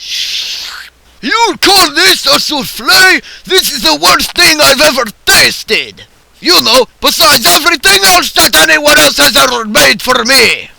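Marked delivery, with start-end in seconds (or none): 1.2-10.6 all-out shrill, loud screaming rant. Show host mocking a student's souffle, Vladimir Purchin screaming. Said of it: "I always scream!".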